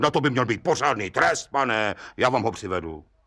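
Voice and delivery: ordinary delivery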